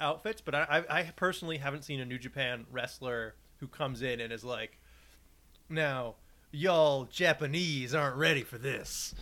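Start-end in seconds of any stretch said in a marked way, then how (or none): 5.7-9.1 put-on slow Old West cowboy voice. Joking about a wrestler entering as an American cowboy stereotype: put-on American cowboy stereotype voice. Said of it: "be the American cowboy stereotype".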